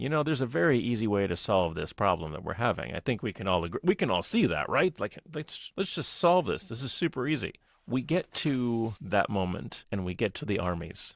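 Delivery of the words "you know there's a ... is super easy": normal talking voice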